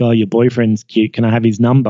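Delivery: ordinary delivery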